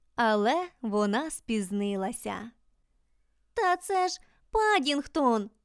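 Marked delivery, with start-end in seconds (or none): 3.6-5.5 sudden, pitched-up, exclaiming cry. Reading a character's line as a familiar figure surfaces in the water, exclaiming. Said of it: "вигукнула Джуді".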